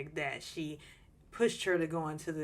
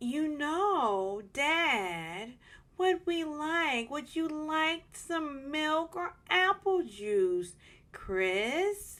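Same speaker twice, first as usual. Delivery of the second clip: very high, slow preschool-teacher voice; 11 semitones higher than usual. Imitating Nicole talking to Chris, like a preschool teacher to toddlers. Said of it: "Nicole talks like a preschool teacher talking to toddlers".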